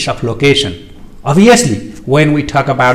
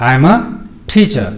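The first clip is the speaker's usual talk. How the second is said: statement tune, pitch falling on teacher. Intonation lesson contrasting questions and statements, falling on teacher. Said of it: "So it is falling".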